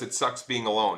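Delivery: normal talking voice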